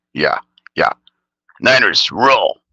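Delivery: put-on cartoon character voice. Imagining what cartoon characters would say: Beavis and Butthead voice. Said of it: "that was my impression of what Beavis and Butthead would say".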